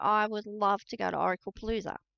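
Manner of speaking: normal talking voice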